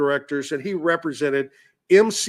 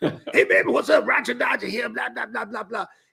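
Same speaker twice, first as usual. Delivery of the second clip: raspy werewolf-style voice, fast, rough and pitched up; 7 semitones higher than usual. Retelling a phone call from Roger Ramsey, imitating Roger Ramsey, like the Wolf Man. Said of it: "He sounded like the Wolf Man".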